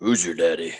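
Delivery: character voice dropped down deep and low. Joking about a villain line: Darth Vader voice. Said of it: "Vader's voice?".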